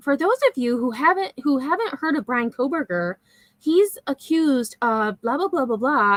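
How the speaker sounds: fake, sugary, put-on concerned and caring tone. Mocking how someone explains the case for newcomers: imitating a fake caring voice. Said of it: "she puts on that fake voice, like the caring voice".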